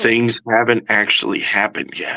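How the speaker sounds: hushed, whispering voice. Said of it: "we have to whisper".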